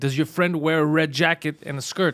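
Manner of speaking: ordinary talk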